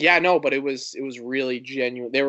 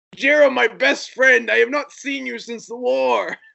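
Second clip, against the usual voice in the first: mock screeching, very high-pitched and raspy; 12 semitones higher, 5 dB louder than usual. Making up fake lines for a show's character, the speaker does mock screaming. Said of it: "but he's screaming".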